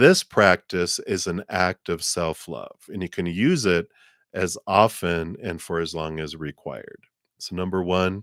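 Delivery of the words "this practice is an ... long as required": ordinary talk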